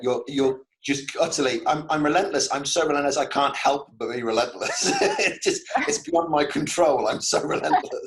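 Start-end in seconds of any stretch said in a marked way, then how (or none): 1.7-8.1 swept up, overwhelmed, helplessly intense delivery. Telling someone how they sound by speaking as them, imitating someone overwhelmed. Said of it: "You sound overwhelmed by it".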